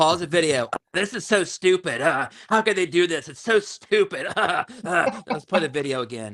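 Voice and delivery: mock impression voice. Doing an impression of someone watching a troll channel, mocking impression. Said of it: "let me do my impression".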